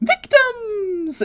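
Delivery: very high, tiny, squeaky little cat voice. Recapping a scene where a floating cat spies on the group: high squeaky Puar voice. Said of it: "in a high, squeaky voice".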